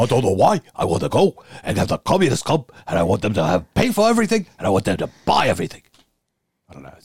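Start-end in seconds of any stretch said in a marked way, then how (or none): 0.0-5.8 put-on voice of an old politician. Joking about communists in an impression: Bernie Sanders impression. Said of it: "my impression of his impression of him".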